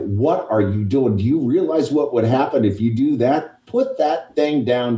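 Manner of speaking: loud yelling with the voice pushed up high. Retelling facing a man with a gun: imitating himself yelling. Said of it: "I literally started yelling at him".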